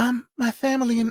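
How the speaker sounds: airy, lilting, high-pitched voice. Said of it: "that very light, lilting, you know, [name] voice".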